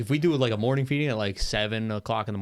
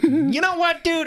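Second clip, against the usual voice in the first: very high, loud, blurted out; 7 dB louder than usual. Showing an occasional impression that comes out sounding like Bill Burr. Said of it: "it just sounds like Bill Burr".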